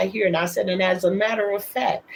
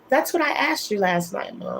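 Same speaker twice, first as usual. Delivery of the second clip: ordinary talk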